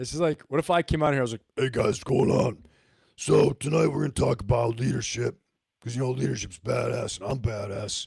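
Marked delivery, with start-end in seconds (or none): 1.6-8.1 low, put-on tough-guy voice. Speaker mocking how a leadership talk might open, in a put-on tough guy voice. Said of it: "only tough guys talk with voices like this".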